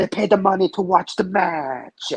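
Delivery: high-pitched put-on Italian accent, laid on thick. Retelling what a wrestler said at ringside, Santino impression, Italian accent. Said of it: "this isn't racist when I do it".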